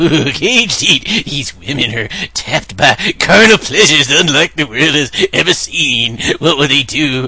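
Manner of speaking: ecstatic, bursting trailer-narrator voice. Host reading a film trailer aloud, imitating the mock-ecstatic trailer narrator. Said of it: "He just sounds like he's ready to explode with ecstasy".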